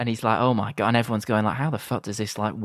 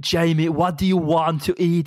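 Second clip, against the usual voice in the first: Austrian accent with a raised pitch; 7 semitones higher than usual. Describing their dad wearing goggles, speaker quotes him asking Jamie: Arnold Schwarzenegger impression. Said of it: "he's talking like Arnold Schwarzenegger".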